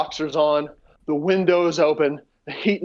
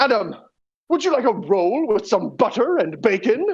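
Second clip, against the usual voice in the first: British rock-star voice, pitched up; 6 semitones higher than usual. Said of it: "in his [name] voice goes".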